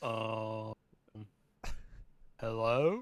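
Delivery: "hello" said with a questioning upward tune. Imagining how Eli Manning answers the phone: imitating Eli Manning. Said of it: "I imagine he answers the phone like".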